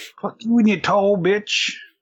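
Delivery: put-on Brooklyn accent, very high and loud. After asking for someone to do it, the speaker demonstrates a Brooklyn accent. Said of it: "in a very good Brooklyn accent".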